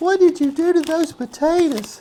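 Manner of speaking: shrill, very high voice. Telling how his wife reacted to his potatoes, he imitates Janice's voice. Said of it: "she talks in that voice".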